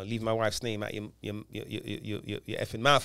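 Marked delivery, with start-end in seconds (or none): none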